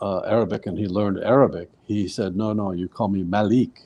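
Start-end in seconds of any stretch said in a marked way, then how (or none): none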